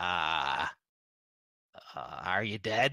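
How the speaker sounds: twisted small voice, pitched very deep. Voicing a figure speaking from inside a tomb: twisted little voice. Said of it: "you hear that twisted little voice say".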